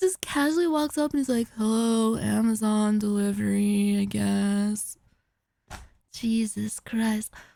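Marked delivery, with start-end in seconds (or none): 1.6-5.0 put-on, utterly bored, flat monotone. Retelling a delivery driver walking up and greeting, imitating a bored voice. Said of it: "like sounding bored as fuck".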